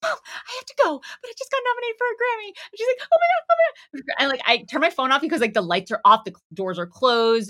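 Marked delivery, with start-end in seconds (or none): 0.0-2.5 very high, acted crying voice. Retelling a quick call to mom from the back, reenacting own past crying. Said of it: "I'm like crying".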